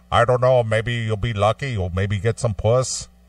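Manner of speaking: put-on, imitated Danish accent. Retelling what a man would say to him, Danish accent. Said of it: "he'd say this into his Danish accent".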